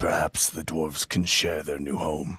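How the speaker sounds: offhand murmur, kept down. A character speaks offhandedly to a companion, with a lowered voice. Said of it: "and he lowers his voice".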